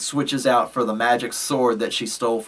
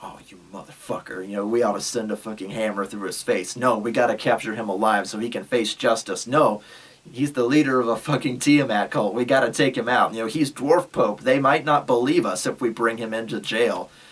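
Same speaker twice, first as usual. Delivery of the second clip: ordinary talk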